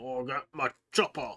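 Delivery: football-hooligan orc character voice. Talking about 40k orcs modeled on football hooligans, slipping into an orc voice. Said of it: "favorite characters to voice are always orcs".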